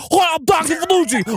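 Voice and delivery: put-on obnoxious Long Island accent. Mocking a learned, affected way of talking, as Doctor Fanucci with a Long Island accent. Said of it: "talk with an obnoxious Long Island accent".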